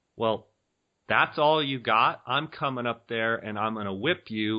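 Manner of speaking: ordinary talk, nothing marked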